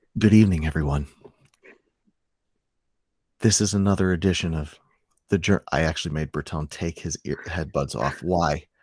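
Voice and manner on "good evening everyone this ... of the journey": soft, smooth ASMR voice. Starting the intro, greeting everyone in a soft ASMR voice. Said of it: "A S M R".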